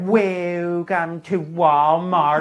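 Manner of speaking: put-on dry, unwelcoming, slightly sarcastic tone. Retelling a store greeter's welcome: imitating a sarcastic greeting. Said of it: "sound a little sarcastic when they talk".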